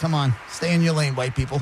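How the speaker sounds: usual speaking voice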